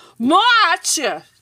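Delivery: firm resolute voice. The God of the Sky repeats his demand to Anansi: firm. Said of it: "Disse o Deus do Céu firmemente".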